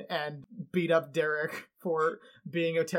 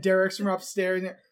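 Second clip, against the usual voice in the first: ordinary talk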